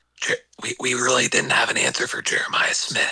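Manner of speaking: put-on whisper. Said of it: "We had Whispering Ewad that night".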